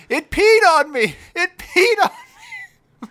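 very high, frantic, freaked-out, swooping yell. Telling how a bumblebee flew in and hit Elliot, imitating Elliot yelling. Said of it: "he's yelling".

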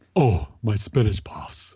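deep put-on voice. Retelling how a voice actor sounds as a character: imitating Patrick Warburton's low voice as Kronk. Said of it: "He's got a low voice and he says".

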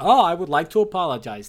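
sulky, pissy, petulant tone. Retelling a film scene where a character is forced to apologize: imitating Daniel Craig being pissy. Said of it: "He's being pissy".

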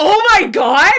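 high, sudden yelled outburst. Retelling a scene where Sam sees a painting: imitating Sam yelling. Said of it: "he just yells".

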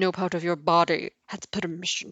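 dry, quiet, hushed, expressionless, dead-level monotone. Discussing a Harry Potter scene, the speaker quotes it as a deadpan Severus Snape impression. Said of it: "in the deadpan Severus Snape".

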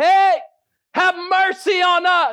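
play-acted very high, long-stretched yell. Retelling lepers calling out to Jesus from afar: imitating lepers yelling. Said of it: "They're yelling so that they can get Jesus' attention".

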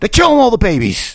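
very high-pitched outcry. Doing an impression on a podcast after announcing it: Alex Jones impression. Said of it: "I'm about to do an Alex Jones impression".

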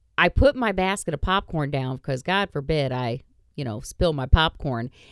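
usual speaking voice

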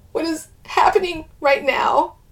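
quivering, unsteady delivery. Narrator reads a woman's reply after a shuddering breath: quivering voice. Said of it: "she says in a quivering voice".

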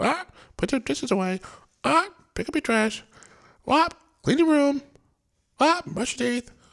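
very high, loud, parrot-like mocking nagging voice. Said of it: "And you sound like a parrot".

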